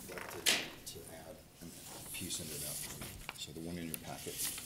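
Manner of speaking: soft, barely audible mumble.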